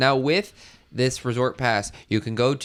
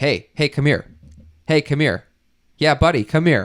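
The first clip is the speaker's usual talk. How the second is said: put-on loud, attention-grabbing holler; 4 semitones higher, 6 dB louder than usual. Retelling how an older gentleman called out to them: imitating someone shouting. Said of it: "this random person starts shouting at me".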